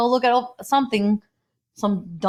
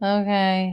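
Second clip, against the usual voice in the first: mock depressed-sounding voice. Mocking own voice on a past recording: imitating own depressed-sounding voice. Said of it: "I sound so depressed".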